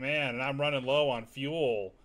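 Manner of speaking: slow, drawn-out, dragged delivery. Mocking a game character's repeated joke: imitating Wedge. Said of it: "every time Wedge talks, he's like".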